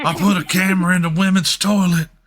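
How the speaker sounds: put-on deep South accent. Doing the impression on request, imitating Hunter's deep South voice. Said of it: "It's such a perfect impression".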